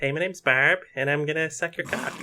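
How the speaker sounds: broad, high, put-on Wisconsin accent, played for laughs. Imagining a campier version of the character, speaker does a Wisconsin accent. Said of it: "I sound a bit like I'm from uh".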